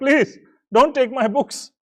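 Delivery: tearful, high-pitched crying plea. Telling a story, the speaker acts out a robbed scholar begging the thieves, imitating a scholar crying. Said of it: "he starts crying, like".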